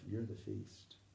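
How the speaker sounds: soft, private whisper, barely voiced. Retelling saying a line to someone across a crowd: whispering. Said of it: "I just whispered it to myself".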